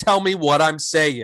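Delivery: ordinary talk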